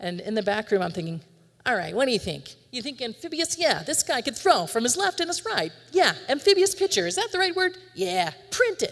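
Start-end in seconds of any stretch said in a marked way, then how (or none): 1.6-8.9 put-on Northeastern accent. Act out the back room talk about two photographs of a pitcher, in a faux Northeastern accent. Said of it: "[IN A FAUX NORTHEASTER ACCENT]".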